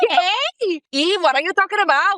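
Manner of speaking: high voice with a thick, laid-on Colombian accent. Explaining how two drinks change her accent, speaker demonstrates a Gloria Pritchett accent. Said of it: "Like my accent just goes like".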